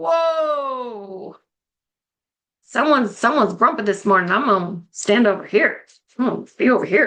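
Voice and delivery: light, joking, playful tone, stretched-out "whoa". Demonstrating how to call out someone being grumpy in the morning, playful. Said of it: "I'm playful".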